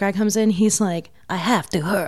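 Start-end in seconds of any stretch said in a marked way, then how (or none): 1.3-2.1 put-on French accent, rude tone. Retelling the little brother's dinner-table line to the French guest: French accent. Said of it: "in the French accent".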